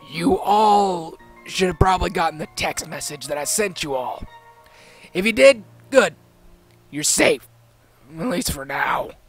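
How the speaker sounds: rough, gruff voice of a heavy smoker. Reading a story, voicing the boss addressing the editors: gruff smoker's voice. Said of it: "in a gruff voice that sounded like he smoked".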